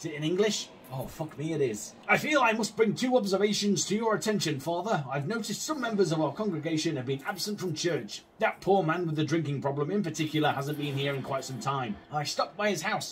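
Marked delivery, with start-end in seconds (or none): none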